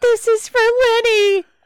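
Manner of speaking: shrill, very high, drawn-out battle scream. Voicing a character who slashes a creature in combat: screaming battle cry. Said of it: "Margot just screams out as she's slashing it".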